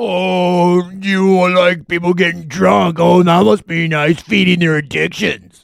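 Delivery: snide, sneering sarcasm with drawn-out "oh". Reviving their internet troll bit: snide internet troll voice. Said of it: "my internet troll Voice?".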